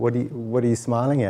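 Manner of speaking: ordinary talk, nothing marked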